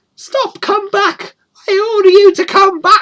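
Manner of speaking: shouting mage voice. Voicing a mage who peers up the shaft: mage shouting. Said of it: "he shouts after you".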